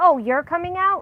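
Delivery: put-on surprised, disbelieving tone. Retelling how callers react on the phone: imitating a shocked question. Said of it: "kind of shocked, uh, voice and question".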